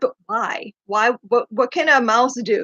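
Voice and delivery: ordinary talk, nothing marked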